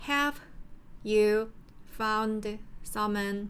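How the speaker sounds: each word clipped short, in choppy breathy bursts. Illustrating speech that is cut too short to sound fluent, choppy pauses between every word. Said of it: "너무 짧게 짧게 끊으면".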